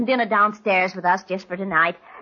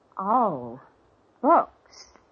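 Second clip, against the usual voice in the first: disappointed, let-down tone. Liz, reacting to mr. hewlett naming his business: disappointed. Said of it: "You sound disappointed".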